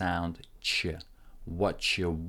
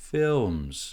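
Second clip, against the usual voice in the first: films starts high, then drops away. Finishing the sentence about costumes in your films: falling intonation on 'films'. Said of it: "starts from the top and goes down because we're finishing the sentence, so it's a falling intonation".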